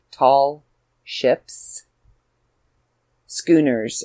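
slow deliberate enunciation, each word spaced out. Speaker repeats the news for listeners, saying it a little slower. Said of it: "I'll say it a little slower for you".

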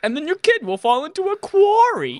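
very high-pitched character voice. Quoting a sitcom line, imitating the way the character says it: Tracy Jordan voice. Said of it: "But the way he says it".

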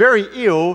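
plain

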